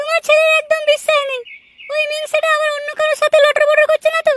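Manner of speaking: put-on young woman's voice, pitch way up.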